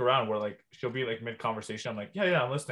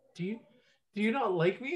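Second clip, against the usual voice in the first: mock tearful, high, words through crying; 9 semitones higher than usual. Retelling how a partner asked a question at bedtime: imitating someone crying. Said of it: "start crying".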